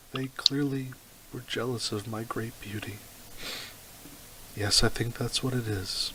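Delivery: calm, steady, slow delivery. Voicing a noble son asked why anyone would do this: calm, slow, steady enhanced voice. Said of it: "he says in a calm, slow, steady, alchemically enhanced voice".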